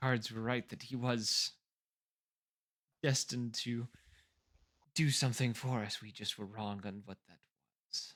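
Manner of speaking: quiet muttering under her breath. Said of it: "kinda mutters under her breath".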